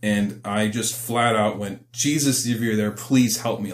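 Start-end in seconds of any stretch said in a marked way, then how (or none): 1.9-3.7 acted-out desperate, tearful, crying voice. Recalling being caught red-handed and calling on Jesus, retelling a desperate crying plea. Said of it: "Like I was like, crying, like desperate".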